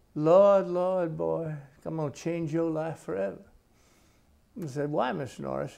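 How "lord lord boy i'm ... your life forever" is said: great put-on male Southern accent. Recounting Gene Norris's words on their first trip to Charleston: Gene Norris's Southern accent. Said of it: "he had this great Southern accent".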